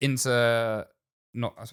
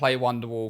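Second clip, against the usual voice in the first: normal talking voice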